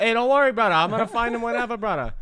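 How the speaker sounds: high, loud, fast, weird fake Hawaiian accent.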